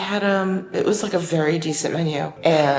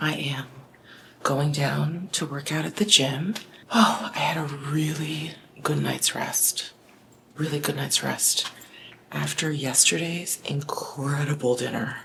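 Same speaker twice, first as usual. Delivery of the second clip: hushed, whispered voice; 2 semitones lower, 8 dB quieter than usual. Speaker recording at five forty-five in the morning before the gym, whispering. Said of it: "I'm whispering because it is about five forty-five in the morning".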